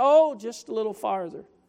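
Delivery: put-on casual, offhand manner. Speaker retells his dad's reply to his repeated question, imitating dad's nonchalance. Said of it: "with a little nonchalantness in his voice".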